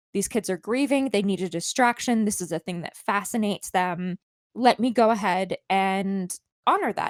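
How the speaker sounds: normal talking voice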